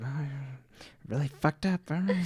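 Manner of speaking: hushed, mumbled mutter. Acting out Veronica talking to herself at the table: imitating Veronica muttering.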